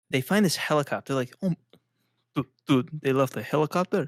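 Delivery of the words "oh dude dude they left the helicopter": put-on Iranian accent. Retelling what fighters said on finding a helicopter: put-on accent of an old Iranian man. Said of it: "I don't know what accent that was".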